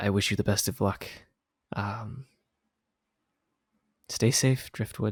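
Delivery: soft, close, leaning-in whisper. Leaning in as she hands you rations, she whispers her farewell: whispered. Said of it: "she whispers to you".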